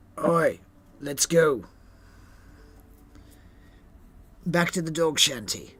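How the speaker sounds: very loud, scruffy-voiced shout. Narrating a scene, voicing someone calling out at the dock, scruffy voice. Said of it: "along with a scruffy voice".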